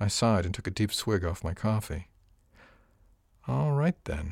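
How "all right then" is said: musing aloud, quiet, pitched up. A man answers the narrator's news over coffee: murmured to himself. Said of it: "He murmured it almost to himself".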